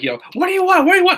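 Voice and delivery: pitched way up, frantic, rattled-off freaking out. Retelling a scene where Seth freaks out: imitating Seth freaking out. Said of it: "Seth's is freaking out".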